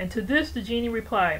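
ordinary delivery

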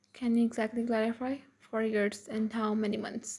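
ordinary delivery, nothing marked

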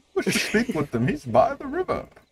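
put-on very high, soft old man voice. Voicing a character while reading a script aloud with others, old man voice. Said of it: "That was a good old man rendition".

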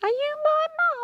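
tiny, squeaky, very high crocodile voice. Reading a story, a tiny crocodile in a girl's pocket asks a question, squeaking. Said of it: "Squeaked the crocodile".

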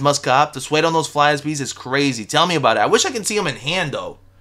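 ordinary talk

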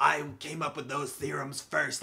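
sinister movie-villain voice, rough and creaky. Describing a dramatized character, imitating how he talks like a bad guy. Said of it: "he talks like".

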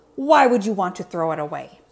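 grumpy, scowling. Oscar questions Zoe about her tutu, scowling.

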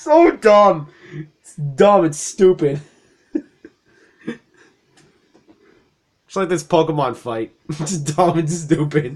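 uncontrollable laughing. Cracking up at your own stupid joke during a game fight, laughing uncontrollably. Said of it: "I can't stop laughing".

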